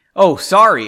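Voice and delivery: very loud, full-voiced exclamation. Reading a story aloud, a character apologizes after a collision: exclaiming. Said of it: "Astrid exclaimed".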